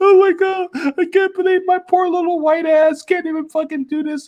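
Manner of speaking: very high, tearful, blubbering crying voice. Describing a woman crying in a tv interrogation room, mock crying. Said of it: "just crying like".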